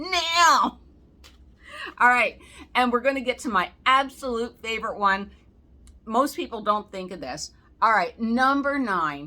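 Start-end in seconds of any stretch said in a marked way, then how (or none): 0.0-0.8 put-on demanding voice. Asking viewers to subscribe, imitating mom. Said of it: "That's my mom's way".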